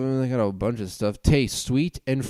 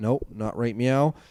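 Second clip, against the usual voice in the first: normal talking voice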